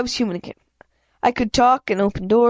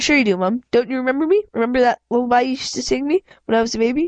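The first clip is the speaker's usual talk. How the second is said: ordinary delivery, nothing marked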